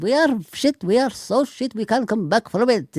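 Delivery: put-on Arabic accent. Imitating Husam complaining about being shit: imitating Husam's Arabic accent. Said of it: "with the Arabic accent".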